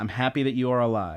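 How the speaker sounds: usual speaking voice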